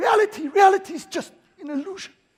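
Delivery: put-on big, high-pitched Dutch accent. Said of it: "with his big accent".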